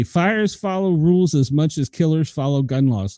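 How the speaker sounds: normal talking voice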